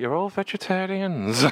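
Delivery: put-on clumsy, amateur Welsh accent. Quoting a line from a film he loves, in a put-on Welsh accent. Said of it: "That was my Welsh accent".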